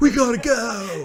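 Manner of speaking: shrill, very high, very loud all-out scream. Doing a Nicolas Cage impression while chatting about bad movies. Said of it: "That is a great fucking impression of".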